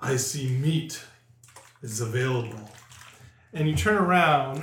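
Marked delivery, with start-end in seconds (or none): 0.0-2.6 deep rumbling voice, much lower pitch. The narrator voices someone speaking from behind the players, in a deep rumbling voice. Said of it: "a deep rumbling voice from behind you say".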